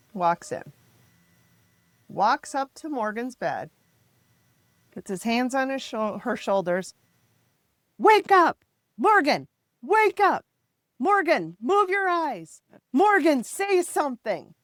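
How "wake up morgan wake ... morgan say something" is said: mock, loud, very high-pitched shouting. Retelling how a neurologist shouted at Morgan at her bed: imitating a doctor shouting. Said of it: "And he's shouting at her".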